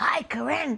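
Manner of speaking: mock, high-pitched, aggressively friendly tone. Retelling how a visitor greeted her with a big smile: imitating a very aggressive, friendly greeting. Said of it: "like this".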